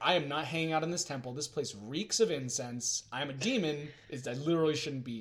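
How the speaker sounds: ordinary delivery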